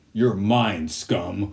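stiff, robotic, mechanical delivery. Comparing Batman voices, one speaker asks which is better, in a RoboCop Batman voice. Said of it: "the RoboCop Batman voice".

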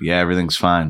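mock flat one-tone voice. Retelling own reply to someone asking if everything is all right: imitating own flat monotone reply. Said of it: "I was just talking in one tone".

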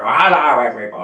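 put-on high, squeaky children's TV puppet voice. Show how you used to copy Roy's voice and greet everybody in a Zippy voice. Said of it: "So I would do Zippy's voice for that".

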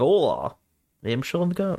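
put-on Scottish accent. Imitating an actor playing a Spaniard in a film: Sean Connery Scottish accent. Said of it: "He just does his Scottish accent".

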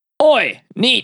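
voice sounding somewhat like a pirate. Host introducing the catchphrase for Dave's Trivia Corner: sounds kind of like a pirate. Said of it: "Sound kind of like a pirate".

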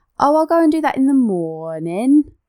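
Essex-Northampton twang with words stretched out. Asked to try the sister's accent, imitating sister Tasha's Essex-Northampton twang. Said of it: "So she'll be like".

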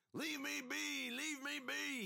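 thick, rough holler, very high-pitched and slow. Narrator reads a raggedy man's cry as three boys attack him, shouting. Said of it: "He shouted".

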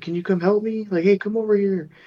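very high, pretend-hurt, pleading tone. Imitating a skinwalker pretending to be hurt: imitating a skinwalker faking hurt. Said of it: "a skinwalker will, like, pretend to be hurt".

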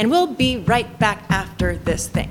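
choppy, chopped-up radio broadcaster cadence. Criticizing podcasters who copy broadcasters, the speaker demonstrates a choppy podcast broadcaster cadence. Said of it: "this cadence that happens in the literal voice of podcasts".

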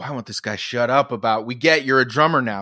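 usual speaking voice

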